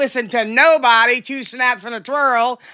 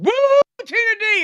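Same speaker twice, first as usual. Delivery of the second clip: very high, whooping holler; 9 semitones higher than usual. Retelling the brothers down the street calling out: imitating someone yelling. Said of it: "out there yelling".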